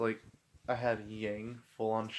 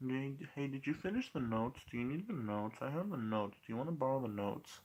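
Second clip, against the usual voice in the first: hushed, quiet and very relaxed delivery; 3 semitones higher than usual. Retelling how a friend offered to lend class notes: imitating a friend speaking quietly. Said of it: "so quiet about it".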